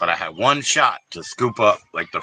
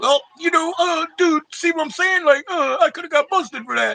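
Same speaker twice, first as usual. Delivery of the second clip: very high-pitched, indignant, angry, acted-out griping. Retelling a coworker's complaint about a joke: imitating someone angry. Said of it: "he got mad 'cause he was like".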